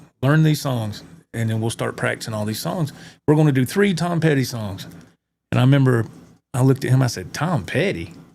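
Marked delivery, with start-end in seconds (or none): 7.3-8.1 heavy sarcasm, dripping and acted out. Recalling being told to learn [name] songs, retelling own sarcastic reply. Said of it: "real sarcastic".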